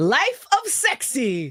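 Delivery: slow, drawn-out, wide-pitched laughing, teasing tone.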